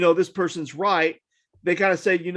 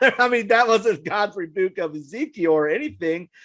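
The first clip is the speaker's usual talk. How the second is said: plain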